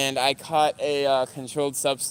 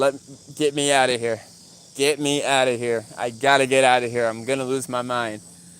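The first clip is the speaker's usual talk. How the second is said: usual speaking voice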